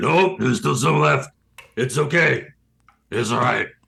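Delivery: gravelly creaking orc voice. Voicing Orgoth the orc, who insists the keg isn't empty: Orgoth voice. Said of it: "And Orgoth will, like, kinda shake. He's like".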